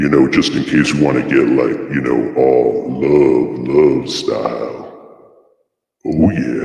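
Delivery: booming, very deep, loud voice effect. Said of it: "if you thought that was deep".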